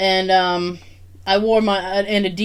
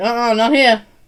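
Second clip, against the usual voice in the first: ordinary talk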